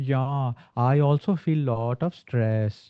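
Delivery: very slow, unhurried delivery with drawn-out words. Acting out a woman's reply to a stressed friend, imitating someone's slow speech. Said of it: "Did you notice the speed difference?".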